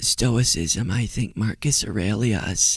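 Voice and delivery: soft, hushed half-whisper. Repeating words from a clip just played: half-whispering. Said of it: "I'm whispering for some reason".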